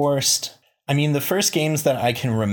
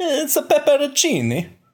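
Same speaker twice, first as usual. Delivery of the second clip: light, very high-pitched, sing-song Italian lilt. After being told he sounded Italian, the speaker slips into a Mario voice. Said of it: "You almost had a little Italian accent there".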